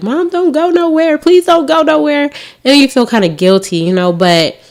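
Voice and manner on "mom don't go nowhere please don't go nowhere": mock very high, crying little kid voice, pleading. Retelling how the babies begged before a night out: imitating crying children. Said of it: "my babies would be crying like".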